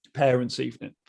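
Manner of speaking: usual speaking voice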